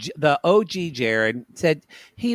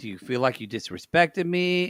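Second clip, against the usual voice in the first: plain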